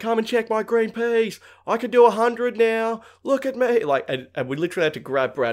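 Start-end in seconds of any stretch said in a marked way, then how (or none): 0.0-3.8 worked-up, very high-pitched yell. Retelling how Brad yelled at the cops, imitating Brad yelling. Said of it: "Brad's yelling at the cops".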